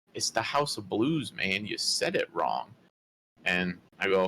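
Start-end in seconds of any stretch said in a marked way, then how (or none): 0.2-2.7 swooping, scornful, condescending and judging put-down. Retelling a stranger correcting a mistake: imitating a judgmental, condescending stranger. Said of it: "judging you so hard for being stupid".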